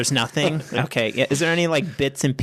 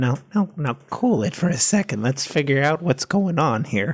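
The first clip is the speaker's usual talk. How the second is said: hushed whisper. Speaking as the character Edward to Dilly as figures approach, whispering. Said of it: "Edward will whisper to Dilly".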